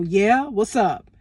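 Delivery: put-on aggressive delivery. Retelling how the manager answered: imitating an aggressive reply. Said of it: "so much aggression in his voice".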